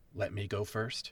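loud, audible whisper. In a game scene, asking two companions to let them go first, stage whisper. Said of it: "I'm whispering still".

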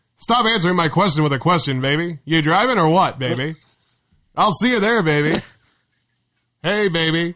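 put-on old-time mobster talk. Speaker retells how a man delivered his lines: 1920s gangster voice. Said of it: "like he was like a 20s gangster".

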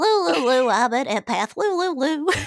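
put-on high cartoon child voice. Asked why they turned into a South Park character, showing off a Butters impression. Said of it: "I can do an awesome Butters impression".

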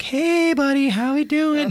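put-on very high, slow, drawn-out baby talk. Retelling how the hospital staff talked to his son, baby talk voice. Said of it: "They're talking to him like baby talk".

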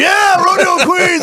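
put-on very high, squeaky, leering, creepy old-man voice. Retelling filming passing rodeo queens with a phone: put-on creepy old guy voice. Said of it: "Like some old guy going".

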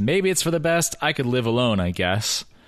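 normal talking voice

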